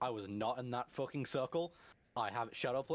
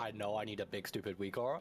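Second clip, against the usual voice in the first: plain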